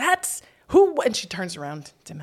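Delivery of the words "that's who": put-on child yell, higher and louder. Retelling what a daughter shouted on the street: imitating a child yelling. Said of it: "She yells".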